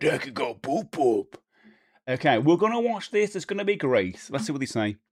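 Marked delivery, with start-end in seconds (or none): 0.0-1.4 big, slow, drawn-out pro-wrestler voice. Talking to viewers before watching a video, repeat the phrase sounding like Hulk Hogan. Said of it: "I sound like Hulk Hogan when I say that".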